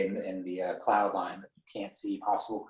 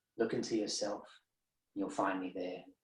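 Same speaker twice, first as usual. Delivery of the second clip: slight, hushed, faint, soft half-whisper; 7 dB quieter than usual. Guiding a listener through a scene where a strange creature speaks, in a slight half-whisper. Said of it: "you hear just like a slight whisper".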